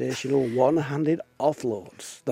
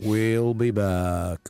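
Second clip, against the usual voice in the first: deep, dropped voice with "back" drawn out; 5 semitones lower, 3 dB louder than usual. Radio host signing off the show for the year, in a Terminator impression. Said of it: "more of Terminator impersonations".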